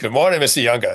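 put-on heavy, quick Boston accent. Recalling waking up in the ICU to a nurse's greeting: strong Boston accent. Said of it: "a voice with a very strong Boston accent".

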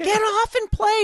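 high-pitched mock yell.

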